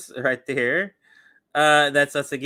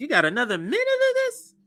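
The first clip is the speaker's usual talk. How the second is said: put-on very high, swooping voice; 13 semitones higher than usual. A speaker repeats his own complaint, switching into a high voice. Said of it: "When I use my high voice".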